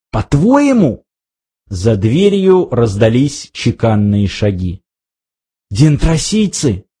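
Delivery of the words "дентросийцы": frightened, fearful whisper. Narrator reads a character hearing footsteps outside the door; frightened whisper. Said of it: "испуганно прошептал Артур".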